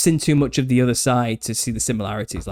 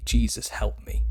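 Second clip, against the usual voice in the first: very quiet, almost inaudible whisper; 3 dB quieter than usual. Retelling a night of being unable to move: very quiet, almost inaudible. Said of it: "very quietly, almost inaudibly say".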